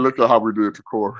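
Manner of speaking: ordinary talk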